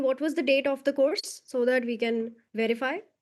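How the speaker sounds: normal talking voice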